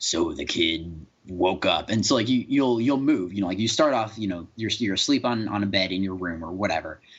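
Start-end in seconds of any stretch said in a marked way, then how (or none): 0.0-1.9 very slow, really gruff storybook narrator voice. Describing a video game's interactive narrator: really gruff narrator voice. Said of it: "in this really gruff voice".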